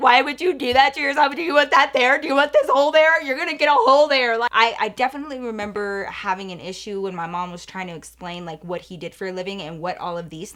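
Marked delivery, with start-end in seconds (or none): 0.0-4.4 acted very loud, high, tearful crying plea. Retelling childhood pleas to people who smoked: imitating own childhood crying. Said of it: "start crying".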